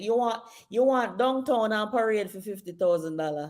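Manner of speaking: Jamaican patois delivery. Repeating a Jamaican saying about a small budget: Jamaican accent. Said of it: "if you want me to say it in my accent".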